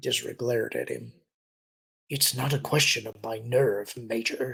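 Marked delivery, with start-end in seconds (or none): 2.1-4.5 growling voice. Narrator reading a character's reply to the Major, growling. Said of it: "he growled".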